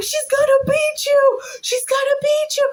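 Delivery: put-on very high, goading, taunting yell. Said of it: "And he's going".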